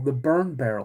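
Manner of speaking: ordinary delivery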